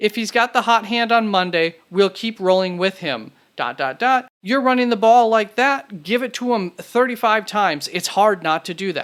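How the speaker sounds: plain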